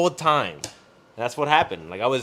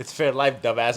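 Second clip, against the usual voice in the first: ordinary talk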